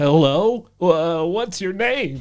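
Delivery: acted high, wavering, unsteady voice. Narrating, retelling their own question to a woman's voice they heard, put-on shaky. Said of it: "kind of shaky".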